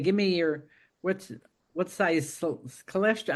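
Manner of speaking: normal talking voice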